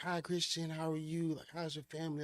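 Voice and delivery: put-on warm, quiet elderly voice. Retelling how a hired man greeted the speaker, imitating Mahadev Desai's soft talk. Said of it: "talk to me like real soft".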